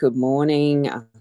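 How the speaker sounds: ordinary delivery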